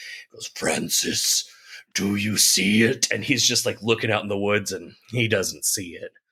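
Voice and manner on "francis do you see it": spooky, creepy, eerie voice. Retelling a scene where a voice speaks to a man in the woods, creepy voice. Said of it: "really good creepy voice talking to him".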